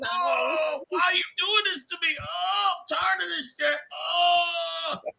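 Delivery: play-acted very high, sobbing pained whimper. Retelling a WWE-style scene with Sarkisian on the ground, imitating Sarkisian whining in pain.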